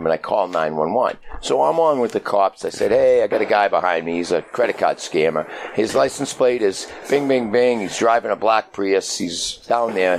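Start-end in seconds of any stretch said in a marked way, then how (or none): none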